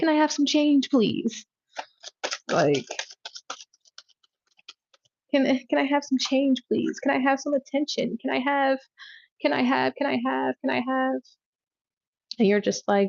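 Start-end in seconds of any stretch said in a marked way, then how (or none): 0.0-11.1 put-on pleading beggar voice, higher. Acting out a homeless person begging for change: put-on begging homeless person voice. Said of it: "they're just there being a peasant".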